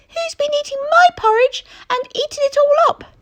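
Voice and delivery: tiny, squeaky, very high voice. Narrating the three bears story, the smallest voice speaks in a tiny squeaky voice. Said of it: "a tiny squeaky voice said".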